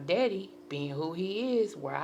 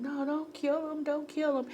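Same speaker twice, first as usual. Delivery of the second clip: very high, frantic, desperate pleading holler; 4 dB quieter than usual. Recounting a man threatening to kill someone, voicing own past cry; retelling own hollering. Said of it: "And I start hollering".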